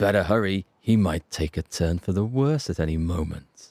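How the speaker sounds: imitated threatening delivery. Repeating a possible bad guy's line while discussing it, imitating a threatening delivery. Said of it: "that voice, the way he says it, it's almost as if it's a threat".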